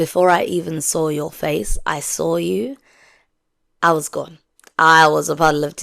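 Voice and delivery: ordinary talk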